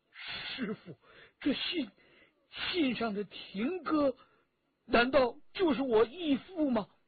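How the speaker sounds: quavering, trembling, very high-pitched voice. Chen Jialuo, shocked after reading a letter, asks his master in a trembling voice. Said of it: "颤声地问".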